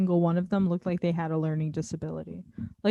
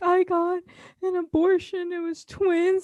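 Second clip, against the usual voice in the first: high, slow, tearful, crying through the words; 10 semitones higher than usual. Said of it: "She's crying".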